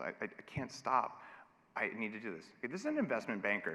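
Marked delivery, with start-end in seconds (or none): 0.0-2.5 crying, tearful, stammering, stumbling voice. Retelling a coaching client's confession about craving candy: imitating someone in tears. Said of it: "in tears when she's telling me this".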